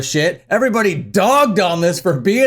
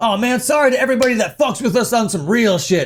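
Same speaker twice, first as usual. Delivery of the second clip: sarcastic mock tough-guy voice, higher; 3 semitones higher than usual. Mocking a band's apology statement by reading it in their tone: mocking tough-guy voice. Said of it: "you're gonna be talking like this?".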